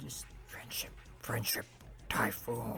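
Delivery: very quiet, breathy, barely voiced whisper. Joking after the audio spiked; whispered Kiefer Sutherland impression. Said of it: "whisper it. That's how Kiefer Sutherland would say it".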